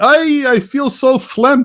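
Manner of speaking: put-on grandmother voice.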